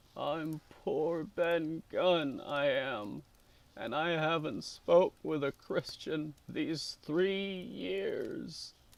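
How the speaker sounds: creaky, hoarse voice. Reading a story aloud, voicing the castaway: hoarse, awkward voice like a rusty lock. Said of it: "his voice sounded hoarse and awkward like a rusty lock".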